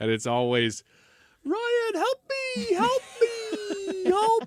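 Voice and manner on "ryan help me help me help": very high, whiny plea, "me" stretched out. Imitating a partner who doesn't want to get up: imitating her whiny help plea. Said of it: "it's always the same voice".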